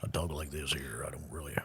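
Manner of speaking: very deep, low, soft murmur under the breath. Joking that the microphones made the voice sound like Nick Nolte. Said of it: "have turned me into Nick Nolte".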